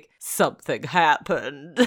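failed put-on voice, stuffy-nosed, congested. Retelling a scene where a man speaks, in an impression sounding like a cold. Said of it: "You just sounded like you had a cold".

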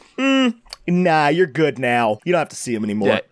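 usual speaking voice

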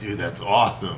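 normal talking voice

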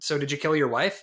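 normal talking voice

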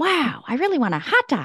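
high, floating put-on voice with swooping pitch. Showing how the two impressions differ: Jennifer Coolidge voice. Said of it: "my Jennifer Coolidge?".

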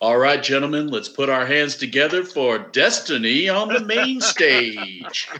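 club stage announcer voice. Showing off the voice from a past career, in an announcer voice. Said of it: "you might recognize my voice from my past career".

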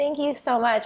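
moved, heartfelt voice. Thanking someone for helping follow a long-held dream: getting emotional. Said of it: "I'm going to get emotional here".

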